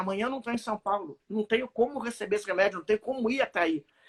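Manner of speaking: usual speaking voice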